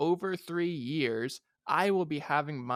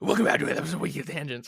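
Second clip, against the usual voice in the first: loud, guttural put-on voice, growing louder; 4 dB louder than usual. Redoing the intro impression after being asked for more guttural: guttural imitation of Dylan. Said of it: "It wasn't as guttural as I would have liked".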